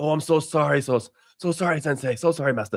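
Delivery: put-on fawning, bowing and scraping. Describing how it responds once you get mad at it: mock groveling apology. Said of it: "your ass".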